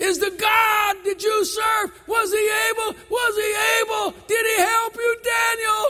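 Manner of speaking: put-on very high, crying, wailing lament. Retelling a king crying out to a man in the story, acting out a lamenting cry. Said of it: "in a lamentable voice, crying".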